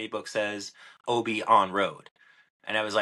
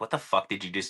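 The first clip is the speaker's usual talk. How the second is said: put-on mildly mad voice. Retelling standing in the parking lot after a bad hole, imitating being kinda mad. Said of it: "kinda mad".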